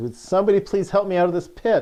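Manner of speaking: very high, very loud, shrill, fed-up frustrated yell. Retelling how a man stuck in a pit yells: imitating a frustrated yell. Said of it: "he finally yells in, in frustration".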